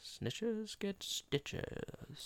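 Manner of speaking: breathy whisper under the breath. Claiming a line comes from The Godfather: George Burns impression. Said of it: "George Burns is like".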